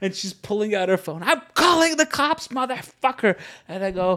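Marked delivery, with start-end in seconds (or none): 1.2-3.4 play-acted enraged woman, high furious screaming. Retelling how an angry woman threatened to call the cops: imitating a woman screaming. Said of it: "looking at her screaming".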